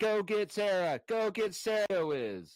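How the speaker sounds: high, very slow, drawn-out urging tone. Imitating the other speaker bopping his head to music: imitating him egging on. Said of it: "He's like".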